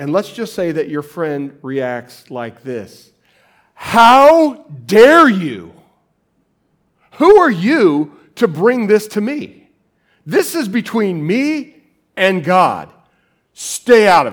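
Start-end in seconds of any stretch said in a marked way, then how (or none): 3.7-14.3 very loud, high, furious outburst with long "how". Showing the audience how a friend might react when approached: angry voice. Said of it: "You like my angry voice?".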